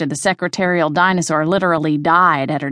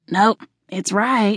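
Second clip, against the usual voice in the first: put-on drunken, slurred muttering, higher pitch; 3 semitones higher than usual. Narrator reads a drunk delivery driver muttering to herself over her list, slurred. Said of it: "she slurred".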